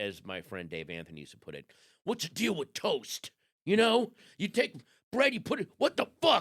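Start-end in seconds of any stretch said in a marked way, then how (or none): 2.0-6.4 very loud, very high, put-on comic fury. Mocking comedians who act angry, quoting a friend's bit, a mock angry comedian rant. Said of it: "like when guys act like the angry comedian".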